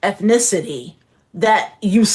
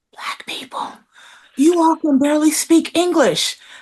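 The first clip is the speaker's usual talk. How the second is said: high, secretive, confiding stage whisper; 8 semitones higher than usual. Recounting what a man said to her; retelling his whisper. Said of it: "And he even more".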